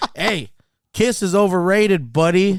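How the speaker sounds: loud, drawn-out, taunting, jeering yell. Retelling taunting rival fans on the way in: imitating own yelling. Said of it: "So I was yelling at people like".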